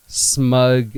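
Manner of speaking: the word "smug" stressed hard and drawn out. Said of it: "Emphasis on the smug".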